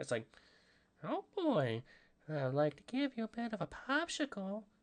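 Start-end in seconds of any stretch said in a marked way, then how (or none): 1.0-4.6 high, slow, drawn-out character voice with whistling S sounds. Showing how to do the voice of a funny character, Herbert voice. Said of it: "I don't like doing the voice".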